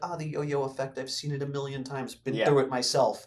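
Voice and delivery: ordinary talk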